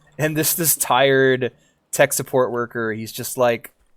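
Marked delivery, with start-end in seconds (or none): none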